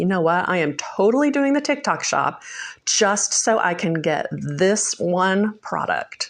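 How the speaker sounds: ordinary talk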